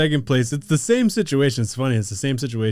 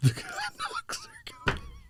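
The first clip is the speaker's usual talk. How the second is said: very high, soft, hushed, menacing and intimidating; 13 dB quieter than usual. Joking about the team name, acting out a threat: mock intimidating threat. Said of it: "trying to intimidate somebody and be like".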